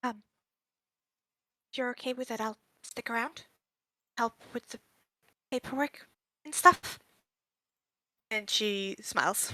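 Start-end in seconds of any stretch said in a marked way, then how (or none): 0.0-7.0 hushed, soft half-whisper, said close. A player's character half-whispers an offer to stay and help, half-whispering. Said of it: "She's kind of like whispering over to her".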